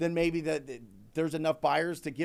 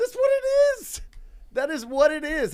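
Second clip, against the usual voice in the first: excited, sudden burst jumping to very high pitch; 12 semitones higher, 8 dB louder than usual. Speaker explaining a deal on a call, voice jumping high. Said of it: "my voice went so high there".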